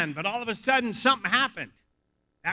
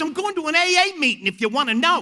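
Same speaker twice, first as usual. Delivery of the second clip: put-on Australian man's accent, pitched up; 5 semitones higher, 3 dB louder than usual. Retelling what a guest asked at the hotel desk: imitating an Australian accent. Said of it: "this Australian guy sits down".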